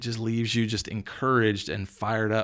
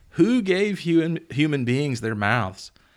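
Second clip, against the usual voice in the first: ordinary talk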